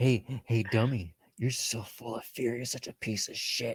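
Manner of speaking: put-on whispering. Discussing a movie scene with others, imitating a character's whisper. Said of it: "you could see him like whispering to".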